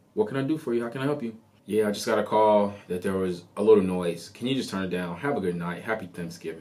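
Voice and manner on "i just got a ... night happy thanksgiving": ordinary talk, nothing marked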